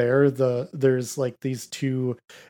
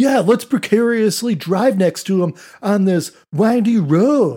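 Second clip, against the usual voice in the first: mock surfer bro voice, higher pitch; 7 semitones higher than usual. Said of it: "the surfer dude".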